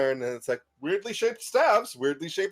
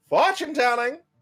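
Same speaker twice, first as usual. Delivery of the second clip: loud, high-pitched, street vendor-style calling out; 6 semitones higher, 4 dB louder than usual. As the players walk down a thoroughfare, the game master voices someone calling out. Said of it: "you hear a voice calling out".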